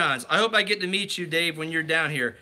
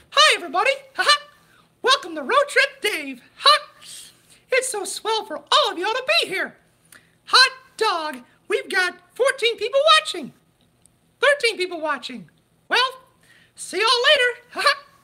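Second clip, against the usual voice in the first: very high cartoon voice with swooping, swinging pitch; 4 dB louder than usual. Doing a requested impression for the live stream viewers: Mickey Mouse voice. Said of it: "I did a Mickey impression".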